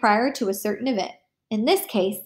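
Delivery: ordinary delivery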